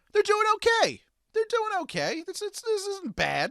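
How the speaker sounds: oddly squeaky, very high, swooping voice. A speaker talks about the Caps' road trip, in an unusually high-pitched voice. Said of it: "My voice is really high for some reason".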